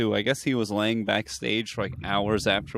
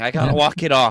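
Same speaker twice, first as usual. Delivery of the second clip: put-on pained comedian voice, higher; 4 semitones higher, 3 dB louder than usual. Imitating Bill Burr suffering after hot wings: imitating Bill Burr suffering. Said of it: "Like Bill Burr, when he's like".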